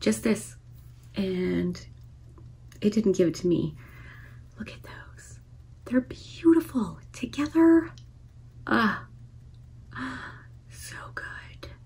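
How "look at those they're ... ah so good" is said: hushed, breathy whisper full of awe and admiration. Reviewing eyeshadow palettes, the speaker admires the shades, whispering. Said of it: "I'm whispering again".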